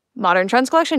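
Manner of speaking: ordinary talk, nothing marked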